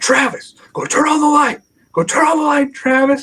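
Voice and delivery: shrill, loud yelling, pitched very high. Retelling a frightening night: imitating someone yelling. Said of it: "I just start yelling at him".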